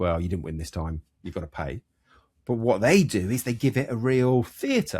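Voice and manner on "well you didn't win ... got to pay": low, fast, flat, level monotone. Imagining a waiter telling a diner they must pay, in a monotone voice. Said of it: "in a monotone voice".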